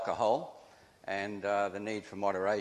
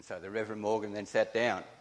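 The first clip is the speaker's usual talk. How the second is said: usual speaking voice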